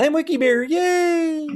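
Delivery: yay stretched out, very high and slow. Recounting someone's dark bit done in a cute voice: sweet Wiki Bear voice. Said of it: "in his Wiki Bear sweet voice".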